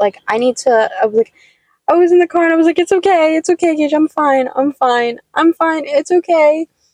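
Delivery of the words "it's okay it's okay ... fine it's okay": put-on slow, tearful, soothing voice through sobs. Retelling comforting their concerned dog gage in the car, imitating themself crying. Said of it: "I just started crying like a little too".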